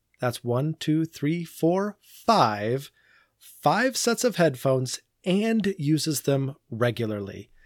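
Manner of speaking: sarcastic, swooping sing-song. Counting headphones aloud after a social media question: sarcastic. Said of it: "You can tell by my sarcasm".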